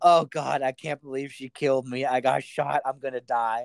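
put-on panicked voice. Retelling a scene of a shot man bleeding in a car, imitating Mr. Orange panicking. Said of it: "Orange is panicking".

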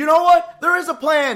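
loud, high, exasperated shouting.

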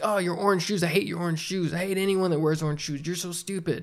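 put-on hostile, mock-angry in-your-face rant. Describing a stranger who gets in your face, the speaker imitates an in-your-face rant. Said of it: "they get in your face".

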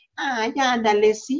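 put-on childish little-girl voice. Describing women who talk like a little girl for attention: childish little-girl voice. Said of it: "el tono de voz es como muy, las famosas típicas que le quieren hacer como niñita".

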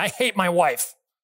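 mock-enraged outburst, acted frustrated rage. Retelling a counseling client's blurted words, acting out an angry outburst. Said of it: "in a fit of frustration and rage".

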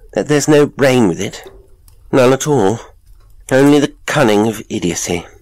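high nervous voice. A man continues speaking to the father, in a high, nervous voice. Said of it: "with a high, nervous accent".

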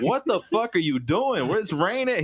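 stunned, angry outburst.

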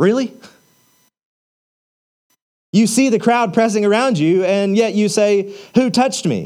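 put-on scornful, half-jeering mocking tone. Reading the disciples' reply to Jesus aloud: imitating a mocking, rebuking tone. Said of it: "you can almost hear this mocking, rebuking tone".

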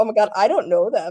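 ordinary delivery

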